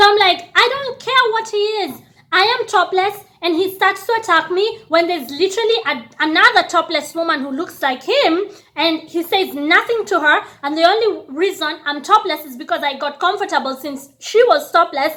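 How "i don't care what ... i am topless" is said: acted defiant talking back, pitched up.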